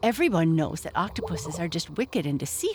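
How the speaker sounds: plain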